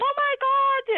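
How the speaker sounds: acted screaming cry, shrill and very high. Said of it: "My friend was screaming".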